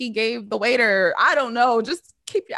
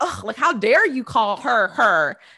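indignant, scornful huff, full of attitude. Retelling how she reacted to being called her: imitating someone with attitude. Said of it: "she said it with the attitude".

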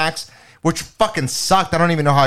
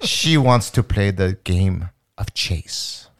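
put-on French accent, lower pitch; 9 semitones lower than usual. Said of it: "In French".

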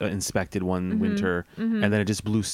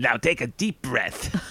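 uncomfortable, off-putting voice; 3 semitones higher than usual. Imagining a guided meditation read in Gilbert Gottfried's voice. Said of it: "Gilbert Gottfried".

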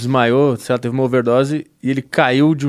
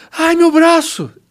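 very high, panicked scream; 4 dB louder than usual. Speaker acting out his girlfriend waking at night, imitating a scream on waking. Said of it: "Aí ela acorda gritando".

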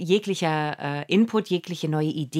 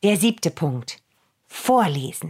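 grand, stagey, theatrical, dramatic proclaiming delivery. Announcing the seventh point, as a theatrical announcement. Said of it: "so richtig theatralisch".

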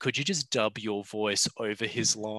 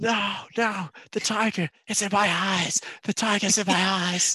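very high, frenzied yell, way up high; 9 semitones higher, 4 dB louder than usual. Imagining a film's final scene with a charging thylacine, imitating Nicolas Cage yelling. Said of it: "and then he just yells out".

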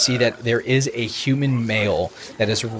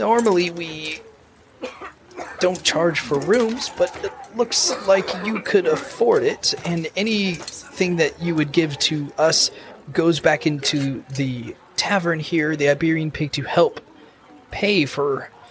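put-on older character voice, higher pitch; 6 semitones higher than usual. Voicing the older tavern keeper who offers the adventurers a room: in character as tavern keeper Bento. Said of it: "He goes".

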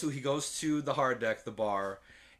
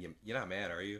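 put-on whisper, lower and quieter; 5 semitones lower, 8 dB quieter than usual. Retelling a movie scene where a character whispers to her: imitating a whisper. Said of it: "he whispers in her".

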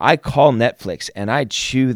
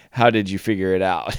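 imitated speech while laughing; 3 semitones lower than usual. Retelling the listener picking up the phone, imitating someone laughing while talking. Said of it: "you're laughing".

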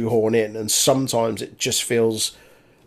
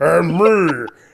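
put-on big man voice, pitched up; 6 semitones higher, 6 dB louder than usual. Retelling a wrestler's line done as a Braun impersonation: Miz doing a Braun impersonation. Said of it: "did his Braun impersonation".

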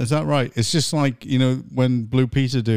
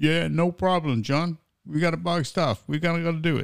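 put-on New York accent, pitched up; 5 semitones higher, 4 dB quieter than usual. Imagining the listener as an MP answering a call, in a New York accent. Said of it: "With a New York accent".

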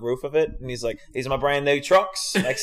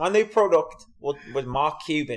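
put-on Australian accent. Trying out how Shark Tank Australia pitchers would say it; imitating an Australian accent. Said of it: "How would they say?".

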